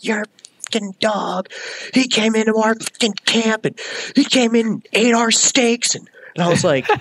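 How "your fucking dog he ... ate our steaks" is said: acted-out furious, high-pitched, enraged screaming. Retelling how an upset man screamed at the speaker about his dog, retelling a furious scream. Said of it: "he's screaming at me".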